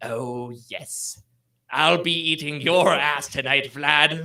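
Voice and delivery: very slow, menacing, ominous delivery, acted out. Voicing an unseen figure heard from the stairs: ominous voice. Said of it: "another ominous sound".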